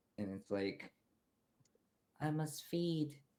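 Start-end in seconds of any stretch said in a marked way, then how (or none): 2.2-3.2 meek, wimpy, high little spider voice. The game master voices a little spider approaching a squire, in a wimpy spider voice. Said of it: "in a wimpier voice".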